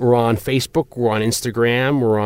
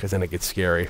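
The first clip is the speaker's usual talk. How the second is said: ordinary delivery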